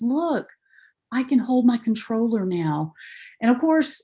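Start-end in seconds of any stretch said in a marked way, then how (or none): 0.0-2.9 put-on voice of a little five-year-old boy. Retelling what a little boy holding a game controller said, little 5-year-old boy voice. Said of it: "in his little 5-year-old voice".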